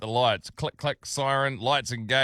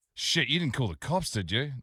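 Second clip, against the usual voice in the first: plain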